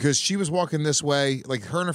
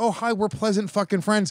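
high, mock friendly, sugary fake-sweet politeness; 6 semitones higher than usual. Contrasting the pleasant way to say the line: mock pleasant friendly tone. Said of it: "I'm not saying, "Excuse me," like".

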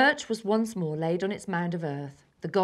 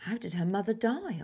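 nervous, uneasy tone; 3 semitones higher, 4 dB quieter than usual. The narrator asks Raven a question: asking nervously. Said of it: "I asked nervously".

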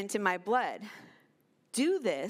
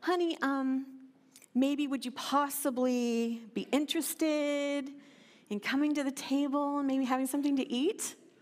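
meek, timid, hesitant, hedging delivery; 3 semitones higher than usual. Imagining a parent meekly calling a child to the table: mock-meek, timid. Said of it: "kind of meekly like".

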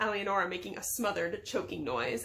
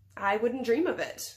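usual speaking voice

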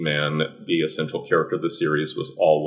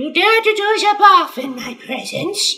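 very high, shrill cartoon woman's voice, big swoops; 7 dB louder than usual. Showing how he voices a cartoonish female character, in a cartoonish Griselda voice. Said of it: "since she's just a total cartoon".

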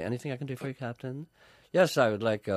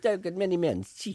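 very high fake Italian accent, broken-English style; 10 semitones higher than usual. Retelling a ship captain's words to him, in a fake Italian accent. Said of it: "I pretend they're Italian".

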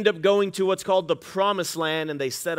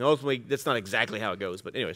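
usual speaking voice

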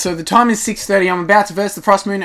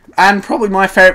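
voice cracking; 5 dB louder than usual. Player who just got a rare zebra fish pet in a game, voice cracking. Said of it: "voice crack".

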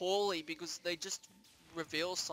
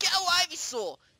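shrill, very high, very loud battle-cry shout; 12 semitones higher, 10 dB louder than usual. Showing how Ash should sound: Pokemon Trainer voice from Smash Ultimate. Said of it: "make Ash sound a bit more like Pokemon Trainer in, um, in Smash Ultimate".

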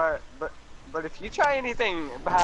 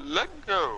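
short, fake, affected joking voice. Restarting a stream after a ruined intro, in a put-on deep voice. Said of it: "That was my deep voice".

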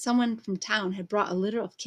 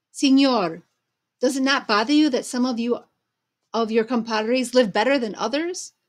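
loud, raised, shouted yell; 3 semitones higher, 6 dB louder than usual. One of Martha's friends calls out to a man addressed as señor: yelling. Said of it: "yelled one of Martha's friends".

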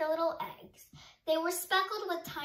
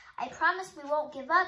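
ordinary delivery, nothing marked

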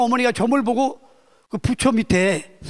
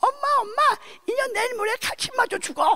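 put-on babyish little voice, pitched very high; 13 semitones higher, 4 dB quieter than usual. Retelling a story, quoting what someone said in a baby voice. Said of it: "아기 목소리로 그랬더니".

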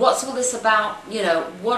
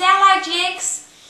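loud, high put-on Australian accent with Aussie vowels; 10 semitones higher, 6 dB louder than usual. Quoting how Dimmy greets the speaker: Dimmy impression, Australian accent. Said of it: "And that's my Australian accent".

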